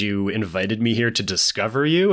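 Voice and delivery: ordinary talk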